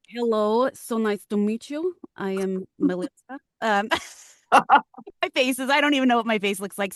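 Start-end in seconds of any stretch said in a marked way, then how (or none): 0.1-3.3 slow put-on Russian accent, each word deliberate. Trying out an accent when asked, introducing yourself in a russian accent.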